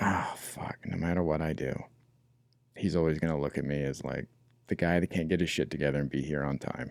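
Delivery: very quiet, hurting, beaten-down, defeated murmur. Demonstrating the second way the words can be said, defeated and hurting. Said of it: "more like defeated and like hurting".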